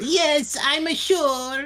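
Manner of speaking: poor, bad fake Japanese accent, pitched very high. Voicing a japanese woman answering a question, bad japanese accent. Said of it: "I don't do Japanese accents".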